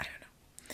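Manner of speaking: breathy, unvoiced whispered aside.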